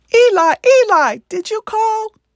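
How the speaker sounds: very high, slow, loud puppet voice. Acting out a college puppet script, Samuel's line in Elmo voice. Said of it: "Samuel's voice in the recording was almost identical to the Muppet Elmo".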